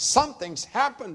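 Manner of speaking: very high, loud, alarmed, frantic outcry. Jason's wife phones the narrator the day after his discharge, shouting. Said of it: "she shouted".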